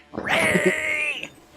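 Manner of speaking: battle yell, war cry. Voicing a rat leader pointing at the party: rat war cry. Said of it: "having war face as it points his clawed finger at you and goes".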